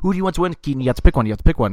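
mock very fast talking. Retelling pressing a kid to pick a wrestler: imitating saying it really fast. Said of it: "I kept saying it, like, really fast like that".

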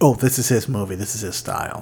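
ordinary delivery

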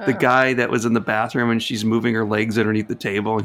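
normal talking voice

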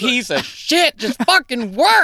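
angry outburst voice. Retelling swearing at a project off camera: imitating own angry swearing. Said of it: "I'm so angry".

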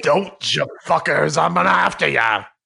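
rough, creaky voice like someone possessed. After a co-host says to go through the door, answering in a possessed-sounding voice. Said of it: "Sounded like he was possessed".

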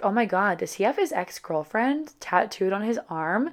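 ordinary talk

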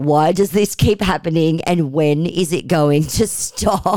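ordinary talk

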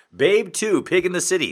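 broadcast announcer style. Announcing the sequel's title as a bit, in an announcer voice. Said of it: "announcer voice".

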